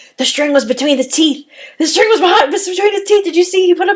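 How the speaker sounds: put-on eager kid voice, high, excited, blurted shout. Retelling a magic show as a kid, imitating her own excited shout. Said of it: "I just kinda shouted out".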